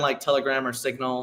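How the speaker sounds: ordinary talk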